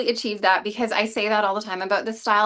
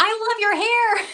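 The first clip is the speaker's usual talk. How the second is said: mock very high, screamed-out call; 12 semitones higher than usual. Retelling what a woman in the drugstore said to her down the aisle: retelling a scream. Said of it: "she literally screamed down the aisle".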